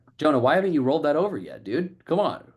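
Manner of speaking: casual assumptive prodding. Showing a sales question in role play: assumptive manner. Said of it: "in an assumptive manner".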